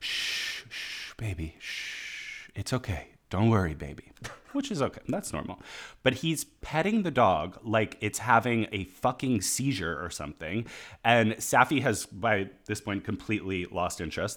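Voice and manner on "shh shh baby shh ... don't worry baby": slow, soothing whispered shushing. Retelling a man hushing the dog he holds in front of him, mock soothing hush. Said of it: "holds it in front of his, going".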